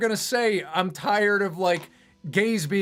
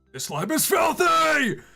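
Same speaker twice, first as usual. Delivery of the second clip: acted, rough, loud, high-pitched anime-dub style yell; 8 semitones higher than usual. Mocking Breaking Bad memes with anime voice acting, yelling Breaking Bad anime-dub voice. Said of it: "It's just like so loud. They're always yelling".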